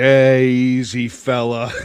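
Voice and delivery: level, flat monotone delivery, a touch loud. Retelling a talk show moment: imitating Norm Macdonald. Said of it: "He's like".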